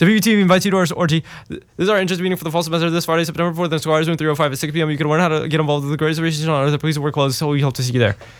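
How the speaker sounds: rattled off as fast as possible, rapid-fire promo read. Reading the second station promo as fast as possible, rapid-fire read. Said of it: "read the second promo as fast as I can".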